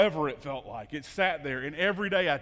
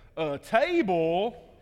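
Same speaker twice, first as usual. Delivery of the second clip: Southern drawl with the word "table" drawn out; 3 semitones higher, 3 dB louder than usual. Retelling what he said to Chris, caught on videotape: Southern drawl. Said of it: "with the best Southern drawl ever".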